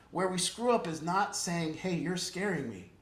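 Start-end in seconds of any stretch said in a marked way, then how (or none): none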